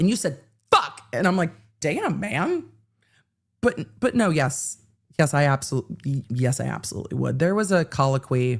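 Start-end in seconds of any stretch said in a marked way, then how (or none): 0.0-1.0 all the weight put on fuck. Retelling how Jackson says it, heavy stress on fuck, like Jackson. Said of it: "Jackson puts like all of the emphasis on fuck. He's like".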